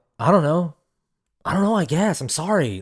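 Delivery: put-on jumbled, awkward, mumbling teenager delivery. Imitating a teenage character's stone-faced reply: imitating a mumbling teenager. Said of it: "delivers every line like such a teenager".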